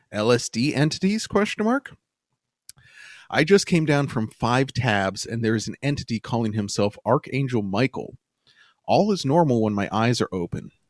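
ordinary delivery

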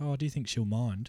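put-on nonchalant boy voice. Retelling how Billy asks about the piano: nonchalant Billy voice. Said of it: "he just kind of nonchalantly says".

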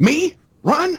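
very high-pitched, offended, affronted and insulted tone. Retelling a manga scene, imitating offended Lupin. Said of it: "Lupin goes from being offended".

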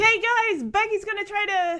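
very high-pitched, loud hollering. Retelling a scene where someone yells from outside: imitating someone yelling. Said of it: "we hear Danny yelling from outside".

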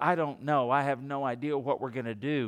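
imitated tearful, teary voice. Retelling a poor mother's answer about Thanksgiving: imitating a tearful voice. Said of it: "with tears in her eyes".

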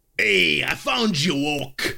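put-on Boston accent, orc monster yelling. Narrator voices an orc running up and yelling to Oak: Boston accent for an orc. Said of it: "he should be from Boston".

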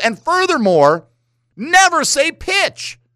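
high lecturing voice.

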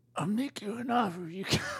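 put-on very high, struggling, worn-out old-man voice. Trying a Marlon Brando impression: imitating Marlon Brando. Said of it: "I just sound like an old man struggling".

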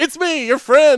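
excited, high, loud, chummy, pumped-up voice. Imitating the guy who greets Canada: imitating Scott Stanford, excited. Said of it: "he's always like".

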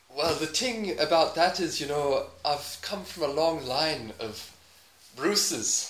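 thin, weak, unconvincing put-on Irish accent. Given irish as an easy accent to do in a game, weak put-on irish accent. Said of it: "I'll give you an easy one, Irish".

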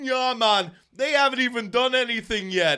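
attempted Jamaican accent. Retelling what a guy on a bus in a documentary said, put-on Jamaican accent. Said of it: "I know that's a Jamaican accent".

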